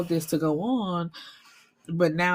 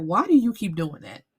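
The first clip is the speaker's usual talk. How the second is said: ordinary talk, nothing marked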